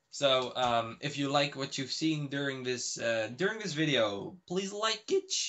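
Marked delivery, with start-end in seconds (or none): 4.4-5.3 voice cracking, much higher, faster. Wrapping up a video, asking viewers to like it, voice cracking. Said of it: "fucking voice crack".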